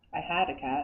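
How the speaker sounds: dry, no-nonsense, totally straight deadpan delivery. Retelling a tour guide's answer to a lady's question: imitating a deadpan reply. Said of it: "with totally straight face".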